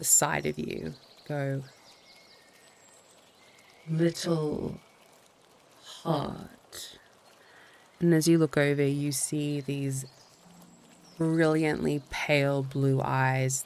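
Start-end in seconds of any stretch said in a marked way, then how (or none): 0.0-7.0 growling, beast-like creature voice, swooping. Narrating a scene, voicing a creature that speaks to the listener: low growly creature voice. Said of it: "a very different voice now, low and growly".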